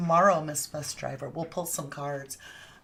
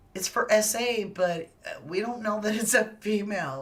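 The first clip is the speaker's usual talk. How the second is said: giggly, laughing speech broken by giggles; 4 semitones higher than usual. Speaker discussing an unrelated charge in a case, giggling. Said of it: "I'm giggling".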